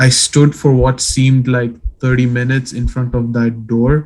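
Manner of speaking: ordinary delivery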